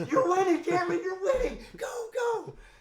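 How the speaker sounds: shrill, very loud, high, all-out scream. Retelling cheering on a fighter from the corner: retelling own screaming. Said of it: "And I'm screaming".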